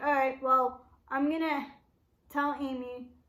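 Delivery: ordinary delivery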